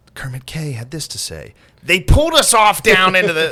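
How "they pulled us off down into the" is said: very loud, high-pitched screaming. Reading a quote aloud while imitating Carlin screaming quotes. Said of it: "making me laugh last night doing that".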